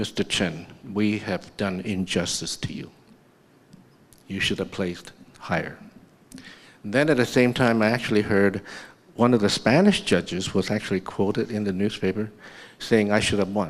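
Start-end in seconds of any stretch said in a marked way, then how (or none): 0.0-5.8 put-on soft, thick, laid-on Russian accent. Quoting a Russian judge who came backstage after the results, in a thick Russian accent. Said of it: "with a very thick Russian accent".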